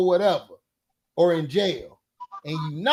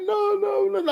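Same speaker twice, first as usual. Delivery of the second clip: high-pitched fake weepy crying, put on; 12 semitones higher than usual. Retelling her reaction after being scolded for lying, imitating fake crying. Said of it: "I be doing that fake crying".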